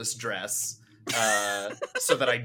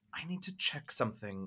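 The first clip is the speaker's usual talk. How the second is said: whispered line, quieter; 11 dB quieter than usual. Voicing Kent telling Virgil something quietly: whispering in character. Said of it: "Kent is just gonna whisper to Virgil".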